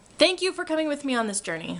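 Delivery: high-pitched, excited shouting. Speaker who had lots of espresso, wrapping up a busy week, yelling. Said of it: "I'm yelling again".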